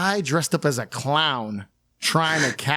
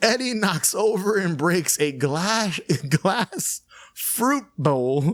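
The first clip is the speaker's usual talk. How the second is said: pitched-up voice talking through bursts of laughter; 5 semitones higher than usual. Summarizing a plot point to the others, laughing while talking. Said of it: "I can't even get through this without laughing".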